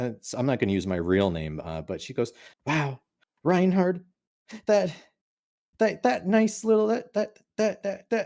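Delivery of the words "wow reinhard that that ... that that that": put-on very high, stammering, stuttering old-woman voice. Imitating an old mother praising a podcast co-host: imitating an old mother stuttering. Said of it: "She's stuttering because she's really old".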